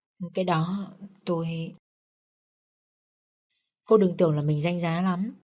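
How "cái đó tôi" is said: soft, wary, apprehensive, hesitant faltering. A young woman answers the young master's demand: hesitant, apprehensive. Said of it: "Cô gái đó nói với giọng e ngại".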